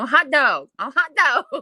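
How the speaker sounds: put-on little dog voice. Voicing a little dog running around: voicing a little dog. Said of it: "the little dog's running around going".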